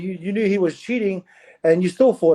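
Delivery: ordinary talk, nothing marked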